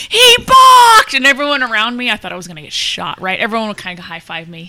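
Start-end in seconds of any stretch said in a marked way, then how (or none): 0.0-1.1 very high, very loud full-lungs yell. Retelling the moment the Dodgers pitcher balked, retelling a full-lungs shout. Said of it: "I shouted at the top of my lungs".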